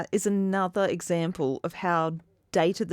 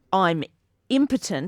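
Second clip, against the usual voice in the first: ordinary talk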